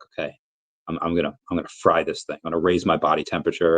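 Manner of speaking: plain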